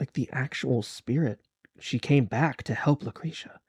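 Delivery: slow, hushed, confiding whisper. Voicing a character who leans in to share a rumor: whispering as a character. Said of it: "she kinda leans in to whisper".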